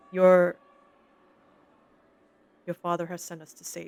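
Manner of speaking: hushed, quiet whisper. Narrating a game scene, voicing a character speaking to the young one, whispering. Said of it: "she's gonna whisper to young Fargo and say".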